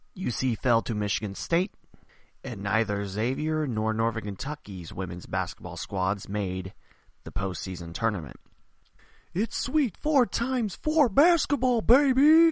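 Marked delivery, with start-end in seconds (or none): 9.4-12.5 very high, raised, loud hollering cry. Doing a Dick Vitale impersonation after college basketball results. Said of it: "my best, uh, Dick Vitale impersonation".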